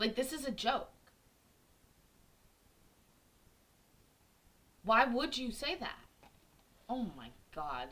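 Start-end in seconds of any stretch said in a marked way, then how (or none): 0.0-6.0 angry, exasperated outburst with raised pitch. Reacting to a story about a man lying to a pregnant woman, getting pissed off. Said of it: "Now I'm getting pissed off".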